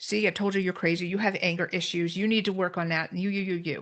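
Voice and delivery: ordinary talk, nothing marked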